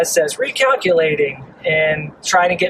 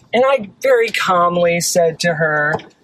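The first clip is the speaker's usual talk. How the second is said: usual speaking voice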